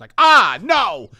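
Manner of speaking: put-on shrill, loud, high cry of horror. Acting out how waking up in the morning feels: imitating horrified waking cry. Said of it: "it's horrifying when I wake up".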